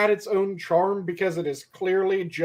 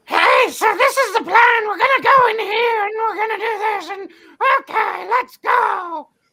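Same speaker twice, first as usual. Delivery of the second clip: very high, gargly cartoon-goblin squeak; 7 dB louder than usual. Redoing the goblin voice he used earlier for a main character, gargly goblin voice. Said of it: "the Goblin voice is the voice that I did".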